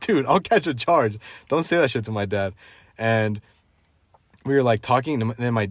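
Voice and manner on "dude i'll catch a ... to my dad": ordinary talk, nothing marked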